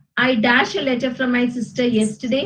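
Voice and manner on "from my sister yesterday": normal talking voice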